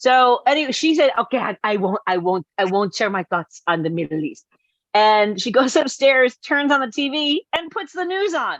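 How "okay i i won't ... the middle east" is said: deliberately horrible put-on Spanish accent. Quoting mom's promise, horrible Spanish accent like Jon Voight's in Anaconda. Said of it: "I'm making her sound more like that".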